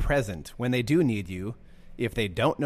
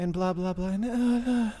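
pitch rises on each blah and nah, up at line ends; 10 semitones higher than usual. Describing a man at their church, mimicking rising line endings. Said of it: "his voice goes up".

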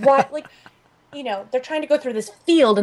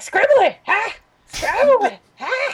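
put-on crazy old man voice, higher; 11 semitones higher than usual. Describing a comic's character who runs around: imitating a crazy old man. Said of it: "this crazy old man who just says".

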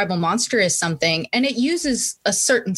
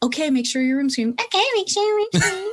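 exaggerated, put-on, very high mocking voice; 11 semitones higher than usual. Imitating the voice everyone uses about a clean room, mocking mom voice. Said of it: "the same voice that I use to make fun of my mom".

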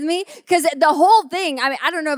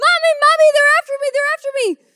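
mock very high, fast, frantic, panicked screaming; 12 semitones higher, 3 dB louder than usual. Retelling how Fulton ran into the house from the wasps, imitating Fulton screaming in panic. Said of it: "And he's screaming".

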